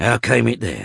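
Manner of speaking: pressing hard, demanding. The locksmith questions a shaken young man beside a body: demanding. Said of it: "demanded Varden".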